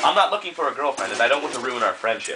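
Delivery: ordinary delivery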